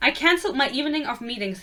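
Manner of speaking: ordinary talk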